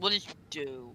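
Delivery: snarled, monstrous, growling demon voice. Voicing a demon who growls at the player character: growling demon voice. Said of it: "as he growls".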